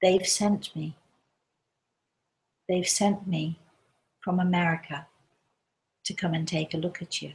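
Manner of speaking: mock-calm, quiet, normal-sounding tone. Retelling a suddenly sober woman's words, retelling a calm, quiet voice. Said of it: "in a voice that is calm and quiet and normal".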